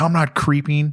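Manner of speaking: very defensive pushback tone. Retelling a driver's reply after being asked why he was creeping: imitating someone defensive. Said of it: "he got super defensive".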